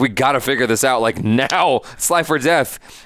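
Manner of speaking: ordinary talk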